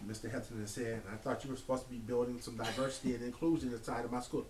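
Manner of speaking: ordinary delivery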